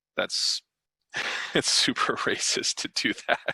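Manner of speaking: words spoken through laughter. Apologizing for laughing at something that is not funny, laughing while speaking. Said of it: "I'm laughing".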